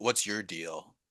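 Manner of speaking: partly growled. Showing how they would approach a consultant in an intimidating way: half growl. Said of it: "kind of like half growl".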